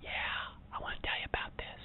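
hushed, breathy, secretive whisper. Acting out a gossip scene: acting out a gossip whispering. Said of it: "and then you start to whisper".

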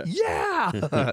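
loud excited shouting. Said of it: "jumping out of my seat and go, yelling".

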